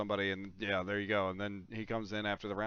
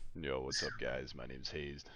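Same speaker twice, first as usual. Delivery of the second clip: ultra deep, very low-pitched, soft manly voice; 8 semitones lower, 5 dB quieter than usual. Speaker mimics the guy with the manliest voice introducing himself, imitating Hazed's ultra deep voice. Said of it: "It's way deeper".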